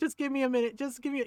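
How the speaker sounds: put-on laugh-choked pleading voice. Retelling a man smothering laughter at a nephew's remark: imitating someone laughing while talking. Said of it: "'cause he was cackling".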